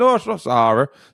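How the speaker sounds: fake thick Irish accent. Retelling how a stranger at a bar asked about a scent: thick irish accent. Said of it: "a thick Irish nondescript accent".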